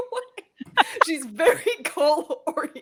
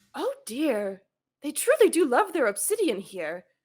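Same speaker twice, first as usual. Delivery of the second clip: muttering under breath, slower; 2 semitones lower than usual. A player's character, ahead of her group, mutters to herself. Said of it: "She just mutters to herself".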